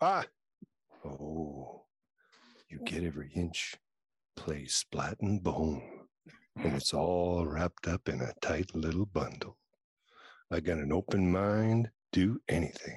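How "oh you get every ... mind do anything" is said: low, slow, sultry sexy voice, Oh drawn out. Asked to read the line in their sexy voice, sexy voice. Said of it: "do it in your sexy voice".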